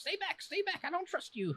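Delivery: tiny, small, very high little voice. A small creature calling from a stump to an approaching character, in a small little voice. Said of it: "you hear this little voice coming from a stump".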